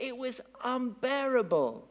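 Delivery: exasperated, high, slow wail.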